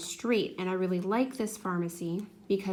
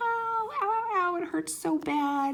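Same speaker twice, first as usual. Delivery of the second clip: mock little girl sobbing and screaming, high, drawn-out; 11 semitones higher than usual. Retelling a little girl's reaction to the first ear, imitating her crying and screaming. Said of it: "She just starts crying and screaming like".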